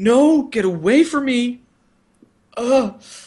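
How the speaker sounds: distraught, high-pitched, drawn-out pleading tone. Retelling a scene where a character tears up: imitating a distraught plea. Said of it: "He is distraught".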